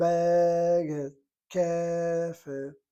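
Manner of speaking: first syllables of Baget and Kefet stressed. Explaining a device of accenting both words: first-syllable stress on Baget, Kefet. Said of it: "you accent the first syllable in both of these words".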